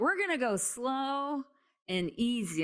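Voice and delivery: put-on high, slow, drawn-out, stretched yell. Retelling what the girls yelled at the speaker while skinning up: imitating kids yelling. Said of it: "they're yelling at me like".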